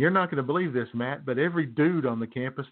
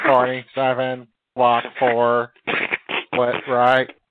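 put-on robotic computer voice, louder; 8 dB louder than usual. Joking about an injured coach calling plays: Stephen Hawking computer voice. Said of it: "computer voice".

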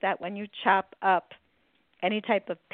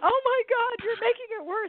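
very high, howling wail of pain. Retelling what a man said as beer was poured on him, retelling a man howling. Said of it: "And he's howling".

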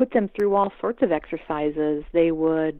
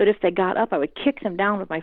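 ordinary talk, nothing marked

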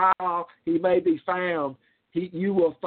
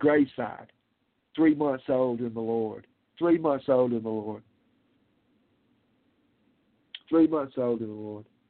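emotional, moved voice with lower pitch; 6 semitones lower than usual. Preacher recalling a scripture he preached at his mother's funeral, getting emotional. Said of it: "I'm getting emotional".

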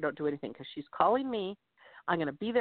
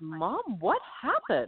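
put-on appalled, horrified tone with swooping pitch. Retelling the daughter opening the door to her: imitating horrified daughter. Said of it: "she just looks at me horrified".

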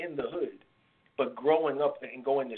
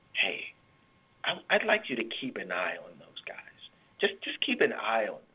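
stage whisper, fully voiced; 4 semitones lower than usual. Retelling what an old supervisor said about some students: imitating someone whispering. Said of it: "She whispers".

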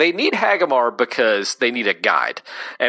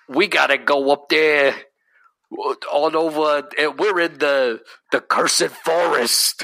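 put-on New York accent; 3 semitones higher than usual. Mimicking an English actor's line in a medieval plague movie: imitating a New York accent. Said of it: "despite often playing characters with New York accents".

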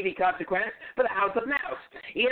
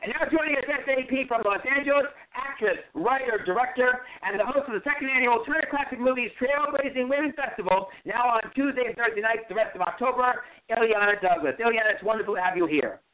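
very fast, rapid-fire, rushed delivery. A host introducing a guest on air, talking very quickly. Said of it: "You talk very quickly".

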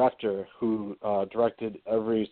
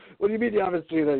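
put-on angry yelling, pitched higher; 9 semitones higher than usual. Retelling how Dallas got mad about an unwatched documentary: imitating Dallas yelling angrily. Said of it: "He started yelling at me".

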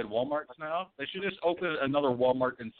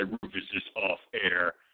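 spooky ghostly voice, lower and slower; 7 semitones lower than usual. Riffing with a co-host about a broadcast breaking up, in a ghostly voice. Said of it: "some ghostly voice would just say".

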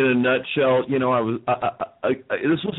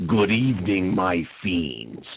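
low, spooky, ghoulish horror-host voice; 6 semitones lower than usual. Recalling a Vegas horror show host, doing a Vegas Vampire impression. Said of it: "he's doing a spot-on imitation of the Vegas Vampire".

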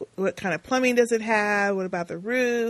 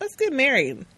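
put-on nonchalant tone, higher pitch; 4 semitones higher than usual. Retelling a movie scene, imitating nonchalant Rocky.

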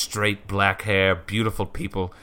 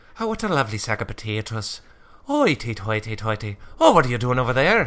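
stage-Irish accent; 2 semitones higher than usual. Offered the chance to show their own irish accent: stereotypical irish accent. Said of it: "Do you want to hear mine?".

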